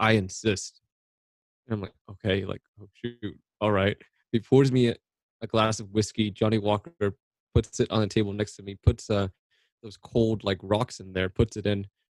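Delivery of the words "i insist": mock-strict, stern, insistent tone. Speaker retells a man in his office offering a drink, retelling a strict insistence. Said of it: "in a very strict tone".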